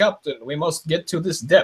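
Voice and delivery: put-on heavy high Russian accent. Recounting a submarine film scene, quoting the first lieutenant in Sam Neill's thick Russian accent. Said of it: "crazy Scottish thick accent".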